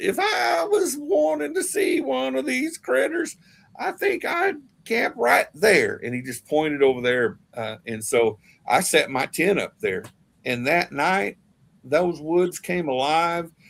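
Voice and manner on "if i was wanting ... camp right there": very high, squeaky little voice. Retelling Mister Crabtree's answer to his question, Mister Crabtree's squeaky voice. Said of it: "In that little squeaky voice of his".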